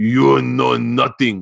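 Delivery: the most heavily broken English. Retelling what a woman said to the speaker: imitating broken english. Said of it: "she said in the most broken English".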